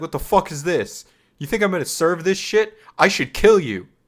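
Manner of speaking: mock angry yelling. Retelling how a man at a conference yelled at everyone, retelling an angry yell. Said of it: "starts yelling at everyone".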